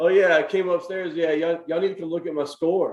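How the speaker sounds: put-on casual boastful tone. Retelling how he came upstairs about his score, imitating a low-key brag. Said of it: "he was keeping it very low key".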